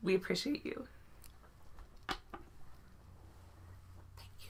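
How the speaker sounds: whispering through tears, crying while talking. Thanking viewers for being here and supporting, crying while talking. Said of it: "while I'm crying".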